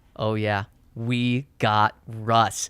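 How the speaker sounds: low, slow, utterly calm and casual. Quoting the speaker's partner answering on the phone, imitating a very calm voice. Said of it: "In the most calm voice".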